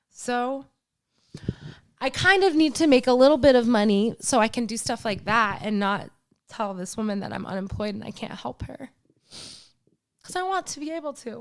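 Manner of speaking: tearful, crying through the words. Speaking about a woman from her new york community, crying while talking. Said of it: "Why am I crying?".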